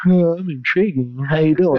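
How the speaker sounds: scornful, mocking meek-man put-on voice. Mocking how a beta guy tries to act intriguing: mocking a beta guy. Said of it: "the beta's sitting there".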